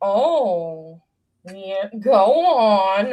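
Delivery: very slow, with long drawn-out Oh. Retelling an SNL bit, imitating Bill Hader. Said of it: "Bill Hader, when he was on S N L, would be like".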